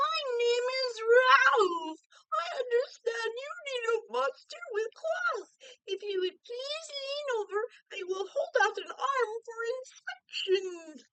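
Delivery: silky, smooth monster voice. Narrator reads a second monster introducing itself, in a high, silky voice. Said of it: "he said in a high, silky voice".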